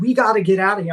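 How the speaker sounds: high, panicked, frantic yelling at close range. Recounting yelling at her from two inches away, retelling own panicked yelling. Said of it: "I'm just yelling two inches from her face".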